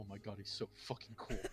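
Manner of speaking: audible hushed stage whisper under the breath. Narrating Zarathan's reaction to someone called Sleek, in Zarathan's audible whisper. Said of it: "whispers audibly underneath his breath".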